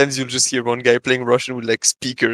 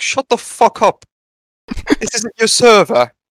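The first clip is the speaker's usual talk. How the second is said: very high-pitched, put-on British accent; 10 semitones higher, 5 dB louder than usual. Speaker imitating a guy on European game servers, British accent. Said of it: "a guy with a British accent being like".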